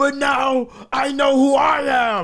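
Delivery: mock emotional shout, high, slow and crying.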